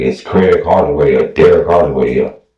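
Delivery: normal talking voice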